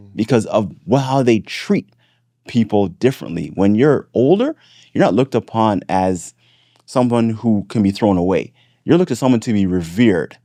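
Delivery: normal talking voice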